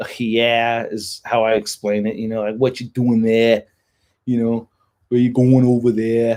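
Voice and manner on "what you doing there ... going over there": put-on northeastern East Coast accent. Explaining regional accents, giving an example: imitating an East Coast accent. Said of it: "they have a yeah kind of thing".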